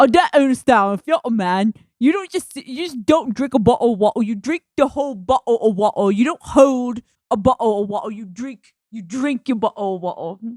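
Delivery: put-on British accent throughout. Quoting the funniest bit a man did, in a British accent impression. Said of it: "he's got a British accent".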